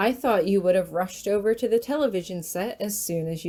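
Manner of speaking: ordinary delivery, nothing marked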